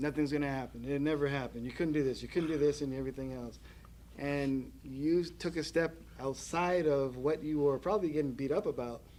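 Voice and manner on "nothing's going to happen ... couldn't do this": ordinary delivery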